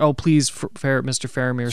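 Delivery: ordinary delivery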